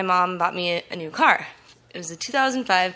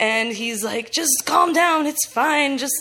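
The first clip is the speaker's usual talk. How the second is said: ordinary delivery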